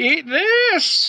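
shrieked, very high scream, "this" stretched out. Spewing electricity from the mouth at an enemy: screaming in character.

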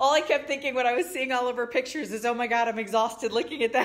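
laughing while talking. Reacting to someone's vacation pictures, cracking up laughing. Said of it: "I'm cracking up".

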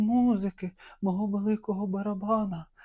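loud, high-pitched, crying-out shout. The emperor, with death sitting on his heart, cries out, shouting. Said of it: "кричав він".

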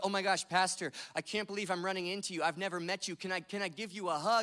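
put-on tearful, pleading voice. Retelling a young woman running up with tears in her eyes: imitating someone tearful. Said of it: "tears in her eyes".

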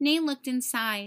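ordinary delivery, nothing marked

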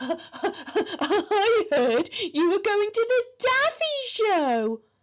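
very high, slow speech through heavy laughter. A girl taunting a boy, doubled over laughing. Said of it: "Margaret doubled over laughing".

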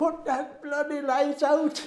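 shrill, very high-pitched yell from many voices. Speaker recalls about a hundred unseen voices shouting at them: retelling a shout. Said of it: "there were about 100 voices shouted".

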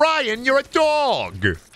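high, swooping cartoon voice with dog stretched out. Acting out a cartoon scene, speaker has Peter answer Brian's question: Peter Griffin voice. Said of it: "Don't do a good Peter".

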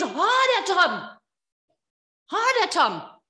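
screaming with each word stretched out. Retelling the father's words to his son: imitating a scream. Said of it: "he screams".

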